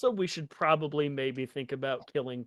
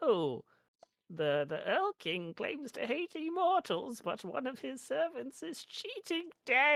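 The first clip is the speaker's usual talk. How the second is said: put-on, very high elderly woman voice; 12 semitones higher than usual. Recounting what someone said, the speaker uses an old lady voice. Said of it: "I just did the old lady voice for".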